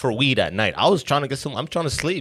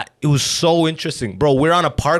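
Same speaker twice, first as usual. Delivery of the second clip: ordinary talk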